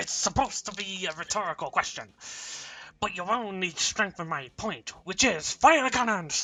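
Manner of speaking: pirate character voice. Reading lines as Liam after being asked for his voice: Liam's pirate voice. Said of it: "Do Liam's voice".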